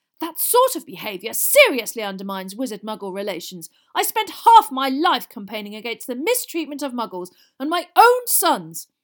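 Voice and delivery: very loud, booming, full-volume shout. A narrator reads a father's line to his sons, shouting. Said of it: "Weasley shouted".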